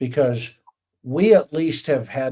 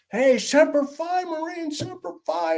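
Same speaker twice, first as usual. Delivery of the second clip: put-on very high, stretched-out, drawn-out yell. Retelling how his dad yelled to a guy in the other boat, retelling a man yelling. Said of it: "And he's yelling".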